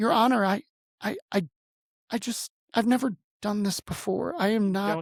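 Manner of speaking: crying and stammering, words breaking up. Retelling a court hearing, speaker addresses the judge while retelling bawling. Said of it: "like I'm like bawling at this point".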